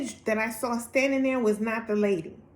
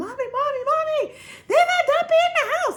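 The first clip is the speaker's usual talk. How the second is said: very high, shrill, loud, acted screaming cry; 5 dB louder than usual. Retelling running to her mom after a shower scare: imitating her own scream. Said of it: "And I'm screaming".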